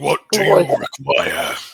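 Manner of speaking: rough, swooping dragon voice of many voices. Voicing a being in a game that speaks with the voice of many. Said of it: "it speaks with the voice of many".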